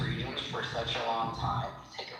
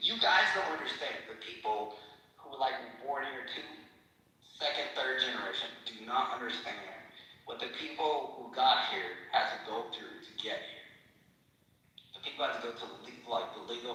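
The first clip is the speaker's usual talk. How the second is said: tearful, emotional, on the verge of tears. Speaking about their dad's years as a prisoner of war, tearing up. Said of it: "I'm tearing up".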